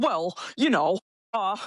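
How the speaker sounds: put-on flustered, low-key panicked stalling delivery. Retelling dad's answer to a plea for help: imitating dad panicking.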